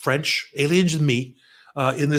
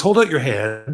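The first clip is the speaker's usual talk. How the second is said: put-on German accent, scientist style. Telling a story, quoting what he said next, in German scientist accent. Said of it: "I'll knock it off with the German scientist uh".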